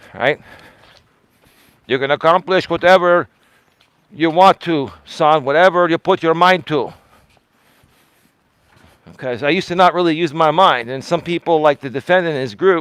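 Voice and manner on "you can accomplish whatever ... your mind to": put-on voice, spoken respectfully. Talking about his late father's advice, the speaker does an imitation of his dad. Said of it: "I can mock my dad".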